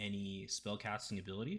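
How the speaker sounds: ordinary delivery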